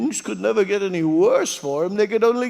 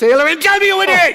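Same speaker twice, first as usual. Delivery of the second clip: angry raised-voice shout, climbing higher; 10 semitones higher, 9 dB louder than usual. Demanding the matchmaker's name, then told not to shout: shouting in anger. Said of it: "please don't shout at me".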